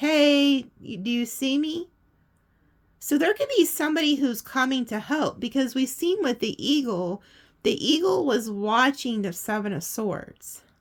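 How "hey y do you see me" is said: acted, slow, long, drawn-out stretched yell. Acting out a man in a tower calling to her: imitating someone yelling. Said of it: "And he's yelling at her".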